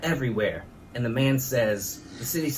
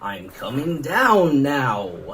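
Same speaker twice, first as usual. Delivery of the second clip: loud, eerie, creepy voice, drawn out; 6 dB louder than usual. Telling a story about the grandfather, retelling a creepy voice. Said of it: "followed by a creepy voice that said".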